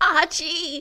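put-on high-pitched call in an old-lady voice. Answering a request to do an Edith impression. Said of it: "Can you do a Edith impression?".

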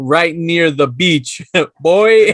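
put-on Jamaican accent. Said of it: "all Jamaican".

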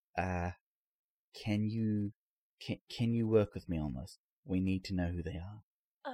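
quiet, hushed tone. Voicing the sheriff taking the doctor aside: very hushed tone. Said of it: "in a very hushed tone".

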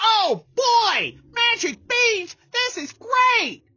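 very high, dim-witted, dopey dog voice. Telling a story, voicing a character offered magic beans, Barky's voice. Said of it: "That's the voice of our dog".

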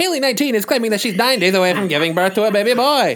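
loud, high, vintage radio announcer delivery. Asked to reread a story aloud, in an old-timey announcer voice. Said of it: "The old-timey announcer?".

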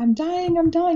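sobbing, very high-pitched bawling cry. Speaker recalls being seven and hearing about diabetes; retelling bawling. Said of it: "And so I start bawling, crying".

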